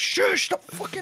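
frantic exasperated outburst.

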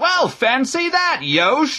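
very high, dragged-out, shouted outburst. The bishop shouts at the priest who is reading aloud to him. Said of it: "the bishop shouted".

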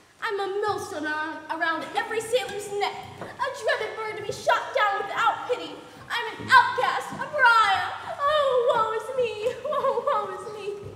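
sobbing. An albatross speaking to a young man, crying. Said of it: "Don't cry. Please don't cry".

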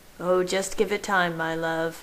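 plain reading voice

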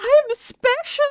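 very high, slow, mock flattered inner voice.

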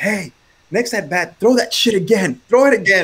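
play-acted loud, high-pitched hollering. Retelling a batter yelling after a strikeout: imitating a loud yell. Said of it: "he's yelling, dude, like, loud".

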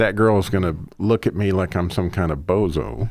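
ordinary delivery

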